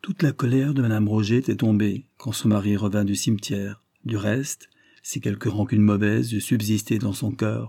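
ordinary delivery

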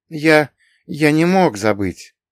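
slow, embarrassed, sheepish mumble. A man answers a tipsy girl who greeted him warmly: embarrassed mumble. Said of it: "смущенно пробормотал Патрик".

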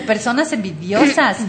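plain

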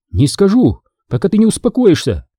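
trembling, agitated voice. Andrea answers her furious father Di Giorgio, who demands to know who the man is; voice trembling with agitation. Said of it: "Дрожащим от волнения голосом ответила Андреа".

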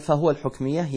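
usual speaking voice

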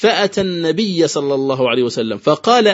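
ordinary talk, nothing marked

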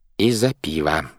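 ordinary delivery

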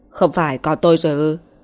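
ordinary delivery

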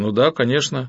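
plain reading voice

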